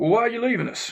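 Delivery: very high official tone. Retelling how the man reading his outgoing paperwork questioned him, in an official voice. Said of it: "in the most official kind of voice".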